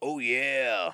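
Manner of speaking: loud, booming mascot-style bellowing cry. Showing another speaker how easy the impression is: Kool-Aid Man voice. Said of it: "Doing the Kool-Aid impression".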